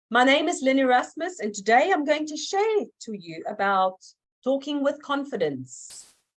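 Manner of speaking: confident, projected voice filling the whole room. Showing learners how to say their name to the room: projecting to fill the room. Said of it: "look at the room ahead of you and say".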